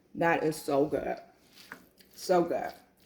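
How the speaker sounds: talking while chewing, smacking sounds. Tasting a dish just cooked on a low fire: eating while talking. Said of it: "I'm sorry if I'm smacking".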